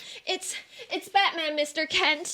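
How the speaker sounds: distressed, upset, halting, faltering delivery. Answering a visitor's question about what is wrong: upset. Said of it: "Why are you so upset?".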